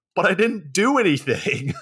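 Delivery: high-pitched screaming. Retelling a story where the cops catch Rambo, mock-screaming as Rambo. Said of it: "And then Rambo just screams".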